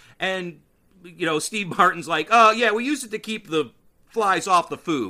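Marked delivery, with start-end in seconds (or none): 2.3-5.1 put-on unbothered, matter-of-fact, raised and pitched up. Retelling a movie scene, quoting the unflustered soldier: imitating Steve Martin matter-of-factly. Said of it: "he's just very matter-of-factly".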